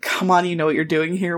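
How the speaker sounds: normal talking voice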